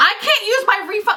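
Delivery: play-acted very high, crazed, out-of-control cry. Recounting repeating a refund problem to a confused cashier; retold as if losing one's mind. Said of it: "Like I lost my mind".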